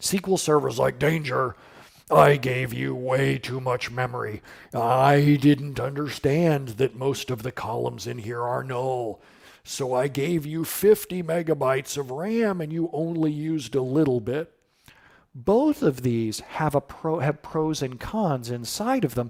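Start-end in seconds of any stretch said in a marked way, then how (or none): 1.0-14.5 acted dim-witted voice. Explaining a query plan, voicing SQL Server as a dumb stubborn guy. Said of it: "I always use a guy's voice for SQL Server because he's dumb and stubborn".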